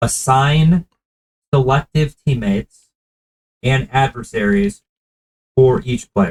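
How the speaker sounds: very slow, halting, broken-up delivery. Repeating a phrase for the other speaker, said very slowly. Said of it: "I'm going to say it very slowly".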